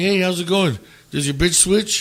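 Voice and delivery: casual, nonchalant, offhand throwaway tone. Retelling what a guy said on walking into the bar: imitating a nonchalant tone.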